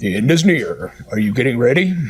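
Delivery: very deep, dramatic, ominous trailer announcer voice. Imagining an end-times show announcer: dramatic movie announcer voice. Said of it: "the announcer's voice going".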